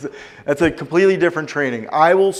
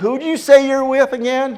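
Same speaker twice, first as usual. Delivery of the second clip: put-on southern accent with twang, pitched very high; 10 semitones higher than usual. Quoting a prospect on the phone, in a southern accent. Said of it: "I don't mean to keep doing the southern accent".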